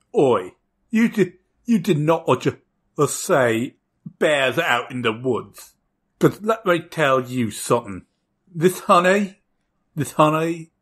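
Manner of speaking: put-on buggy insect voice with British accent. Narrator voicing a character who turns to the player, in a british bug accent. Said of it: "a British bug accent".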